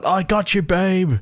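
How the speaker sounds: put-on very high, stretched-out, drawn-out yell. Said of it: "Cher yells out".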